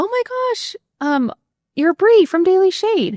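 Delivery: very high-pitched, shrieking, screaming fan voice. Retelling how a lady at a gala recognized the speaker: imitating a lady screaming. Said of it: "some lady just starts screaming".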